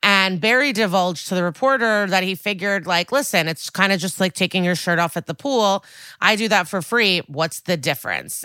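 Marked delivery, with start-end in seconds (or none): none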